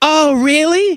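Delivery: high put-on woman voice. Reading aloud a text exchange, the wife's reply: imitating his wife's voice. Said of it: "why I'm doing this voice for my wife".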